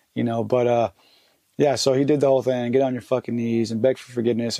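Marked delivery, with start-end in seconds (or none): none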